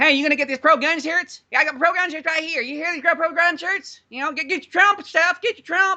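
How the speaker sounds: very high-pitched man's voice, sales-pitch style. Retelling the man running the place selling shirts, imitating his high-pitched voice. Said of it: "the most high-pitched, gayest voice".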